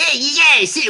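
very high-pitched cartoon child voice. Retelling a film scene where one of the South Park guys psychs out players, in Cartman voice. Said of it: "like he's doing the Cartman voice".

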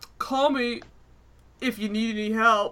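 dopey, dim-witted, dunce-like voice. Retelling a scene where she lies to a guy, imitating the stupid dunce security guy. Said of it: "the stupid like duncy security guy like".

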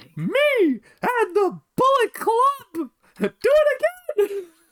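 very high, squeaky, swooping cartoon mouse voice. Pitching a Bullet Club storyline idea, the speaker does a Tony Khan impression. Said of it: "You sound like Mickey Mouse has joined".

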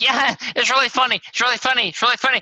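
acted, loud giggly laughing speech, very high pitch. Retelling how he reacted to a trademark question, imitating someone giggling. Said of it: "he just started giggling like".

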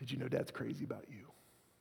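hushed, intimate, soft, breathy half-whisper. Showing how to half-whisper to a child held close: half-whispering. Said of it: "I'll whisper to them".

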